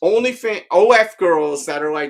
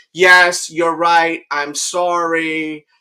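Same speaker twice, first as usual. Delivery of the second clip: put-on reluctant, grudging tone, much slower. Retelling how a woman kept agreeing with a man, mock-reluctant agreement. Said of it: "rolling her eyes like she doesn't want to even be there".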